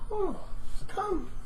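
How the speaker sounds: put-on eerie, creepy, very high-pitched old crone voice. In a role-play, the speaker voices an old dwarf lady answering a traveler: creepy old dwarf lady voice. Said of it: "That's a creepy voice".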